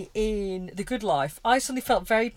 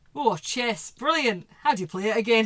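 put-on spoken in a Scottish accent. Asked to repeat the Jeffers line, redoing it in Jeffers' Scottish accent.

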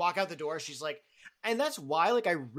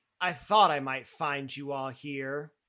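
big, booming voice, loud; 5 dB louder than usual. Game master voicing Strike calling to the party from around the corner, big boomy voice. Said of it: "kind of a bigger, boomy voice".

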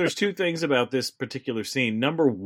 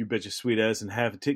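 rapid-fire, rushed, rattled-off fast delivery; 3 semitones lower, 6 dB quieter than usual. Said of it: "'cause he says it so fast".

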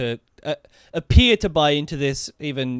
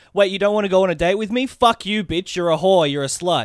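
pitched-up, nasty, vicious outburst; 5 semitones higher than usual. Acting out a guy whose date request was refused: imitating a spurned guy turning nasty. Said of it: "the guy who's like".

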